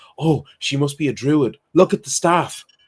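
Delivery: put-on loud stage whisper, barely hushed. Acting out a man pointing at you while telling a woman, imitating a loud stage whisper. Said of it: "like trying to whisper, but really not trying hard".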